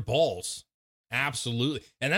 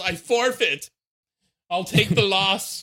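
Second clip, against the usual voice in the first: acted-out, put-on yelling; 5 semitones higher, 6 dB louder than usual. Speaker acts out Chris giving up, retelling Chris's yell. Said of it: "Chris just yells".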